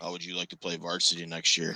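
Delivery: grave, solemn, quiet and dead-serious voice. Speaker retells the listener's dad, his football coach, imitating a very serious voice. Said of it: "in like this this this so serious voice".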